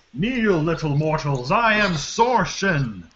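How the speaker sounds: booming, bellowing giant's shout. Narrating a giant lifting a chest to throw at someone, giant shouting. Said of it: "shouts out".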